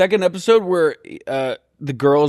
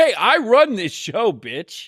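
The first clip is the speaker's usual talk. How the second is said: high, slow, put-on belittling yelling; 7 semitones higher than usual. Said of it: "he was screaming at Coach".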